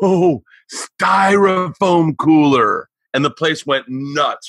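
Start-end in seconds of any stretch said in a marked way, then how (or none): 0.0-2.9 loud, high, carrying stage whisper. Telling a story, the speaker recalls what they said to their buddy: retelling own loud whisper. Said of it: "I hit my buddy Eddie in a loud whisper".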